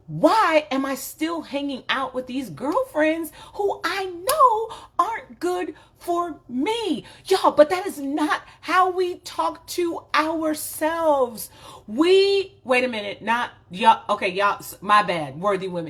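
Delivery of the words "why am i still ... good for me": exasperated, frustrated yell, high and raised. The speaker acts out the harsh way one questions oneself: mock yelling at oneself. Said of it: "raising my voice, yelling at me".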